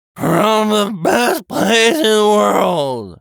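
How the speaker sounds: put-on loud, high, slurred, boozy drunken speech. A man stopped by officers answers where he's coming from, drunken slurring. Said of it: "he slurs".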